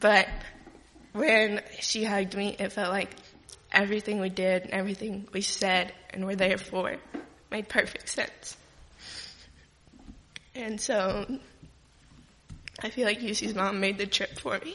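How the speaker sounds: crying, voice breaking in tears. Telling about being hugged by a mom who made the trip, crying. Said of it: "Sorry for crying".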